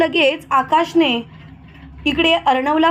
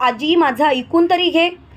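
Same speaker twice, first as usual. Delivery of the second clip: usual speaking voice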